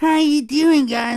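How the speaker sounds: put-on very high, very loud old man voice. Imitating how Igor talks in the game: Igor old-man voice. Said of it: "like old man style".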